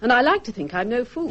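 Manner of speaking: plain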